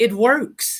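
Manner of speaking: loud, yelled-out call.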